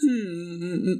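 fake crying sob. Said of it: "నీ ముఖానికి ఆ ఏడుపు సెట్ కాలేదు".

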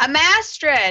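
yelling really loud. Introducing herself to the blacksmith in character: yelling really loud. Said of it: "I yell it really loud".

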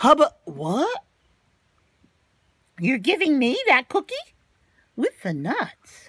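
surprised, caught-off-guard cartoon pigeon voice. Reading a story aloud, voicing the pigeon when the duckling offers it a cookie: cartoon pigeon voice. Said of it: "I'm the askingest pigeon in town".

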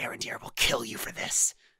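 hissing, spitting, whispered, threatening creature voice. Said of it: "keeps hissing and spitting".

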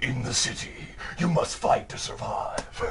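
hushed, breathy, whispered movie-trailer narrator voice. Recalling how someone sounded, doing the line in movie trailer narrator voice. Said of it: "sounded like the dude who used to do movie trailers".

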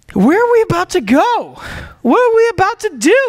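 high, breathless panting, gasping between words. Retelling a fisherman reaching shore after swimming: imitating someone panting. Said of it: "panting for breath".

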